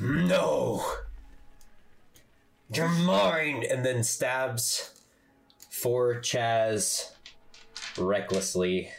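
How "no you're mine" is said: furious, pitched-up raging outburst. Voicing Chaz after Celine yells at him to get out: raging. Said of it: "And Chaz like rages".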